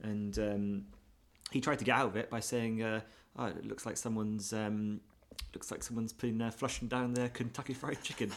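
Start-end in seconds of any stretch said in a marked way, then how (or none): none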